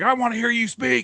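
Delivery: put-on mad, insistent tone, pitched very high. Retelling what an angry voter said on meeting: imitating an angry man. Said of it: "and he's just mad".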